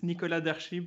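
upper-class, posh French pronunciation. Giving the pronunciation of his own name in a posh french accent. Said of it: "if you have to say it with a French posh accent".

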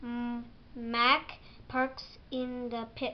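ordinary delivery

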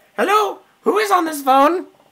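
high-pitched alien voice. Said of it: "I'm gonna do my Conehead impression".

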